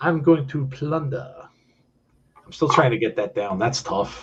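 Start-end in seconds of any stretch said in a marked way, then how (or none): 0.0-1.3 plunder barked in pro wrestler promo voice. Saying plunder in a still-unmastered Dusty Rhodes voice. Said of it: "Anytime I say plunder, it's in my Dusty Rhodes voice".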